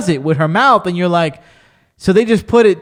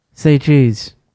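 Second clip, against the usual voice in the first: mock monotone, flat, much lower pitch; 5 semitones lower than usual. Quoting how she says her line, imitating a very low monotone. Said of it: "mad low, mad monotone".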